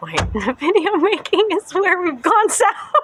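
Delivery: high, loud, laughing through the words.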